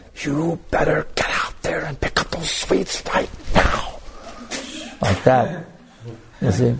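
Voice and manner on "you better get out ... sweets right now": furious, really angry whisper. Retelling what was said to him about the sweets, retelling an angry whisper. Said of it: "I did it in a whisper".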